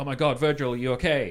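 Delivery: play-acted calling out, full of desperation. Describing the puppet show, acting out Scott calling out to Virgil: imitating Scott's desperate call. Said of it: "desperately calling out to Virgil".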